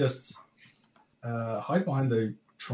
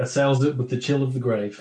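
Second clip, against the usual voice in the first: normal talking voice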